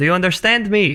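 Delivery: high, yelled-out character voice. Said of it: "I'm gonna yell out".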